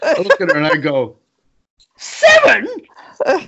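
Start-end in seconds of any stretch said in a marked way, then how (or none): 2.0-3.5 voice leaping way up into shrill, shocked squeak. Driving, the speaker retells reacting when she flashed the card, voice shooting up. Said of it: "my voice went up 3 octaves".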